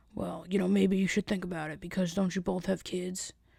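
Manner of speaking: put-on soft older-man voice. Retelling what an older man asked two coworkers, imitating an older man. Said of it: "he talks like this. He's an older man".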